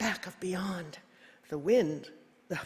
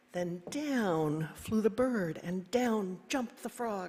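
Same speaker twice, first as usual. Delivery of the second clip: usual speaking voice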